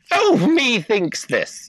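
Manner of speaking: overdone put-on Irish accent, high, slow, lilting, sing-song. Showing how an English man attempted it, in a put-on Irish accent. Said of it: "That's more Irish than he was".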